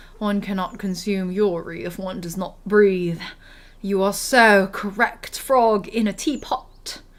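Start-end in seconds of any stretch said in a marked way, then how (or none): 0.2-3.2 fake British accent, lower and quieter. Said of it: "in the British accent".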